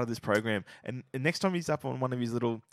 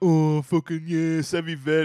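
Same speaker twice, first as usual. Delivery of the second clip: loud, slow, dismissive mocking voice. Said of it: "and you're like".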